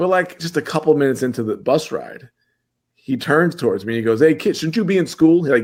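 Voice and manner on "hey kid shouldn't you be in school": high, carrying, mock yell. Retelling a stranger on a bus: imitating someone yelling. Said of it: "yells at me across the bus".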